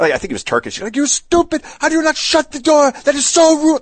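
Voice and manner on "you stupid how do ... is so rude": put-on high, angry yelling. Retelling a man at the sauna who screamed in their face, retelling an angry yell. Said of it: "Like yelling in my face".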